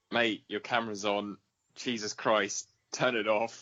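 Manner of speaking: usual speaking voice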